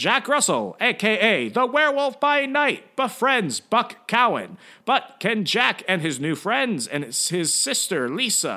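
1950s sci-fi horror trailer announcer voice. Reading a movie synopsis aloud to get in the mood: 1950s sci-fi horror voice. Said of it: "I just think of it in like that 1950s sci-fi horror voice".

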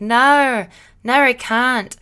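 clumsy, weird, bad put-on Australian accent. A solo podcast host shows a recent habit, in a weird australian accent. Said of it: "doing this weird Australian accent".

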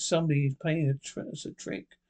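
ordinary delivery

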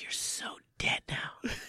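breathy, soft whisper at very close range. Retelling a fight, the speaker repeats what he whispered in the guy's ear: retelling own whisper. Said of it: "I whispered in his ear".

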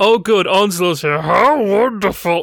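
odd put-on puppet voice. Retelling what a woman said when someone arrived, in a weird Muppet voice. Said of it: "started talking in a weird kind of Muppet voice".

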